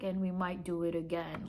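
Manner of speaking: voice dropped very low. Retelling what the staff were heard saying about the lost food, really low voice. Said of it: "like in like a really low voice".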